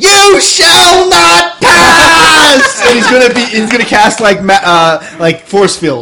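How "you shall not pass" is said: very high, very slow, stretched-out shriek. Describing a character grabbing a staff and throwing it down: screaming. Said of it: "and screams".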